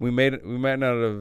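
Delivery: ordinary delivery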